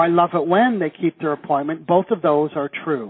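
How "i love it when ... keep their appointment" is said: ordinary talk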